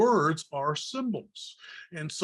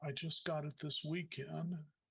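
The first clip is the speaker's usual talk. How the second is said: mock quiet, thoughtful reply, quieter; 14 dB quieter than usual. Retelling a woman's answer about her new cross: imitating a quiet, thoughtful reply. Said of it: "she got real quiet and, and, and thoughtful".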